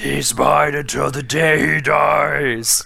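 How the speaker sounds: slow, creaky, shouted, gruff raspy ghost voice.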